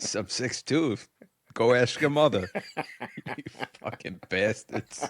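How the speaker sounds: put-on New York accent. Picturing answering young kids at the bar who ask his height, put-on dive-bar accent. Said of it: "I picture you talking like that in a".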